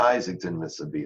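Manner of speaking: normal talking voice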